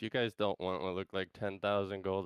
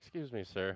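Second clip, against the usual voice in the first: timid, humble, meek delivery; 3 dB quieter than usual. A player's character approaches a guard to ask for a private word, meek.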